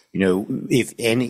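plain

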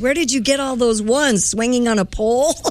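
high-pitched voice, speaking right up. Retelling what her dad said beside her in the church pew, retelling a very loud remark. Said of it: "he said in a very loud voice".

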